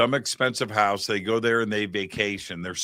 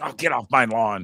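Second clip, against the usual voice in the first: mock, cranky, complaining old man voice; 3 dB louder than usual. Joking about crowded tourist town: mock complaining old man. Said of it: "like some old man that's complaining".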